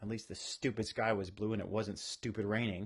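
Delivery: ordinary delivery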